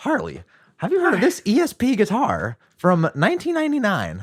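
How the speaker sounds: very high voice swooping around in pitch. Imagining handing a guest a gift while interviewing: Nardwuar impression. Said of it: "that was a pretty good impression".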